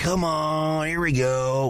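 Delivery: high yell with every word stretched. Retelling yelling at a football game: Dak Prescott "here we go" yell. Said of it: "like Dak Prescott".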